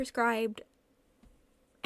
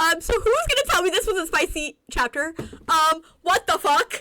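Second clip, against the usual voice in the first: loud stunned exclamation. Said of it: "that was a shock to me".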